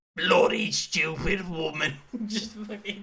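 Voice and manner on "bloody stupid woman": put-on raised, heckling old-geezer outburst voice. Retelling how an old man in the UK Parliament stood up and answered: old geezer voice. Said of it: "this old geezer who just stands up like this and goes".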